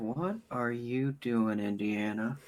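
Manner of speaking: very hushed, low, slow, drawn-out murmur. Voicing a character watching the scene: said under his breath. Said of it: "under his breath".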